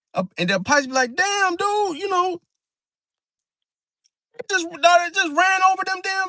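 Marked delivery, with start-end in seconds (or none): 1.2-6.3 mock, very high, feigned cluelessness, rambling. Acting out a Pisces pretending not to know: imitating someone playing dumb. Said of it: "act dumb and act boo-boo the fool".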